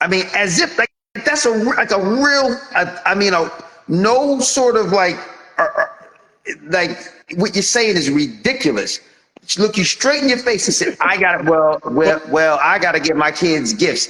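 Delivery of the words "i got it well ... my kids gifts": mock indignant tone with attitude. Retelling what a client said straight to their face: imitating someone with attitude. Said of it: "an attitude with you".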